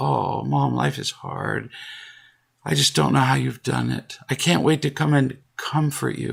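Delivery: pitying, sympathetic tone, full of sympathy. Acting out how the listener once would have answered mom, mock-sympathetic tone. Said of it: "you would have said it with a tone of sympathy".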